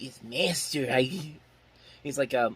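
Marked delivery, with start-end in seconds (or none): 0.0-1.0 chiseled character voice with a chiseled edge. Imitating how an actor sounds in a movie role: Peter Lorre voice. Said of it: "that chiseled voice of his where he's just like".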